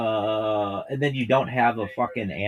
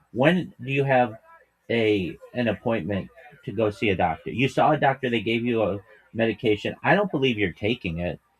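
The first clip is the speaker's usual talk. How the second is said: ordinary talk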